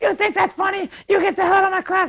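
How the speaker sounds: very high-pitched, freaking-out outburst. Retelling how a teacher reacted after getting soaked: imitating teacher freaking out. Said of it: "she totally freaks out".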